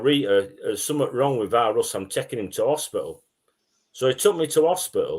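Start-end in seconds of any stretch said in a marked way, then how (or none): none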